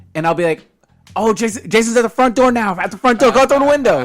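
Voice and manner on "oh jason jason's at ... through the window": false, urgent-sounding, raised, high-pitched callout. Retelling fooling other players over the mic: retelling a trolling fake warning. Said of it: "So I'll fuck with them".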